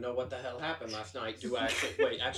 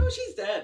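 put-on gushing, chirpy enthusiasm, very high and loud; 10 semitones higher, 9 dB louder than usual. Quoting a girl who said her mom died, mock-enthusiastic tone. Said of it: "she did tell me that her mom died very enthusiastically. Like".

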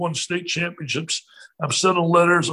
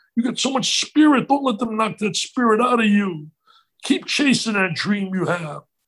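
mock urgent, insistent, encouraging raised voice; 4 semitones higher than usual. Retelling how his mom spoke up to encourage him: imitating mom raising her voice. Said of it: "she gets raised her voice".

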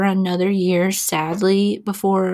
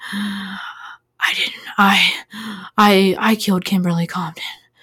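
put-on nervous voice with heavy breathing. Retelling a caller's confession call, imitating a nervous caller. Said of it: "that's literally how he sounds".

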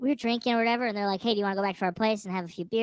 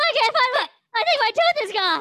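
very high, raised, swooping wailing scream; 14 semitones higher, 6 dB louder than usual. Retelling how a friend who fell reacted: imitating someone screaming. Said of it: "screaming that".

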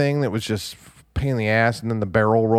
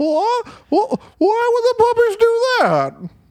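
put-on high quivery voice, higher and louder; 4 dB louder than usual. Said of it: "That's the only Don Knotts I can do".

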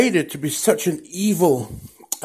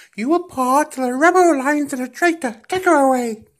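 put-on Birmingham accent, higher pitch; 11 semitones higher, 4 dB louder than usual. Imitating David Prowse's real voice as Vader: Birmingham accent. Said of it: "with using his real voice, and he sounds something like".

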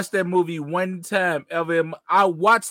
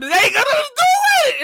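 very high, loud, raised hollering; 6 dB louder than usual. Retelling how he reacted to that scene, retelling own hollering. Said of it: "I'm hollering at them".

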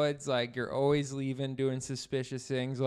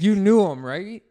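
suddenly much louder with rising anger. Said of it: "Scott, are you getting angry?".

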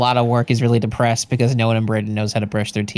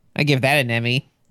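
ordinary talk

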